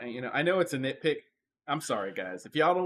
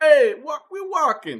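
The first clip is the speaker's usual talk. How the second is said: shrill, booming, put-on New York accent; 11 semitones higher, 10 dB louder than usual. Two performers trade city accents, one Boston, this one New York; New York accent. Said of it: "I'll be like".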